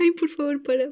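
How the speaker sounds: words pushed through laughter. Retelling a funny phone call and cracking up: laughing while talking. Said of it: "no puedo parar de reír".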